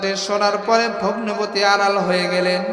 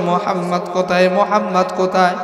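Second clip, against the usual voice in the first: normal talking voice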